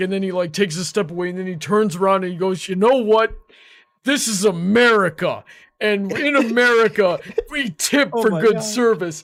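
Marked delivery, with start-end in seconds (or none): 2.7-9.2 put-on sloppy, drunken, rambling rant. Retelling a drunk stranger's rant about tipping: imitating a drunk man ranting. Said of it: "visibly drunk that he can't even really stand".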